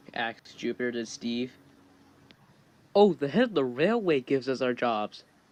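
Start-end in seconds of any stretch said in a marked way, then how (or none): none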